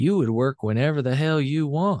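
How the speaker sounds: mock American Southern accent. Musing about why independent contractors work long shifts: southern accent. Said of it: "I said it in that Southern accent".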